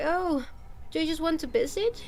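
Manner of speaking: acted let-down, sorrowful, sad and disappointed tone. Retelling the maid's reply at a maid café: imitating a disappointed, sad voice. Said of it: "she sounded so disappointed, so sad".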